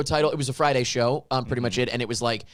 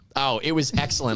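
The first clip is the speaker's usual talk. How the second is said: ordinary talk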